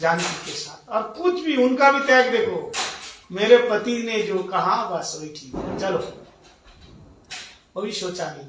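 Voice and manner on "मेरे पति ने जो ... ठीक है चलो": ordinary talk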